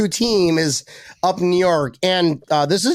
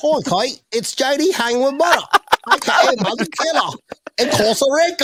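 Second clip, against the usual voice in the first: high, put-on accent drifting into Australian; 6 semitones higher than usual. Doing a greeting in someone's accent: James Dunning's accent. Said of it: "I'm gonna do it in, uh, James Dunning's accent".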